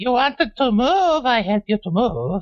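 little piping voice, very high. A game narrator voices what the player Brian hears, in a tiny voice. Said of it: "you hear a tiny voice say".

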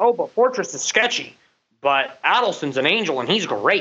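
ordinary delivery

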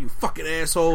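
ordinary talk, nothing marked

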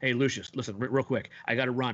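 ordinary talk, nothing marked

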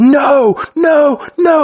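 mock shrill, very high screaming shriek of pain. Retelling what he says once he's really in pain, mock scream of pain. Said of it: "He's screaming no".

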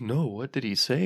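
very serious, soft, quiet tone.

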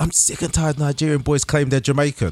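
play-acted, high, mad, fed-up angry rant. Retelling what an angry freshen-up guy said: imitating someone angry. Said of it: "He got so mad".

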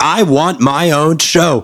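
pouting, sulky, very slow delivery. Retelling an actor stamping his feet for his own show: imitating Abe Vigoda pouting. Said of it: "sounds like Abe was pouting".

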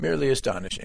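understated, played-down, low-key delivery. Suggesting how someone would have said the phrase for more impact, understated. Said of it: "like that. That has more impact if you say it that way, understated".

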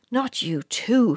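very shocked, stunned, aghast outburst. Reading a story; a mother answers her son's confession: very shocked. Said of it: "sounding very shocked".

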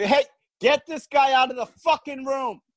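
very high-pitched, shrill yelling. During a mock press conference, ordering a guy out of the room, yelling. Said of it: "Why is he yelling?".

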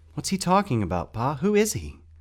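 frantic, worried, high, loud, swooping voice. John asks Pa about the figure who just spoke; asking frantically. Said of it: "John asked frantically".

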